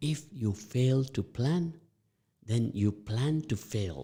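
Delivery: slow, measured, unhurried, deliberate delivery. Teaching a saying to listeners still waking up so they grasp it: slow and deliberate. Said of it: "I'm going to say it slowly now so you can grasp it".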